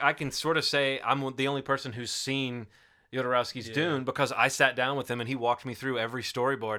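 plain

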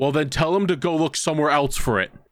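irritated, fed-up, angry tone. Retelling what the boss said when told it wasn't there, imitating his angry reply. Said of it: "looked at me really fucking angry and went".

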